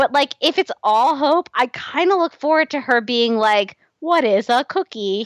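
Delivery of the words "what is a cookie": put-on robot voice, slower. Discussing a show, the speaker imagines Hope learning to be human: Hope robot voice. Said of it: "Keep doing the robot voice".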